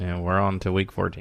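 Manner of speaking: flat, expressionless deadpan delivery.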